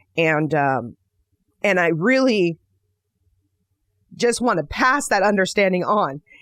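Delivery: choking up, voice catching with emotion. Speaker reflecting on their own work: choking up. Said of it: "the reason that I'm choking up right now".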